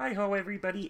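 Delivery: very high-pitched frog puppet voice. Talking about doing accents, the speaker shows an easy one: Kermit the Frog voice. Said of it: "You can do Kermit the Frog".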